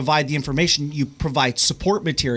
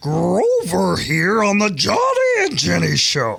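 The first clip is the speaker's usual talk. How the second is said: animated sing-song voice with pitch swinging all over; 4 semitones higher, 4 dB louder than usual. Doing a voice on request after being asked: Grover voice. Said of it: "Let's hear Grover".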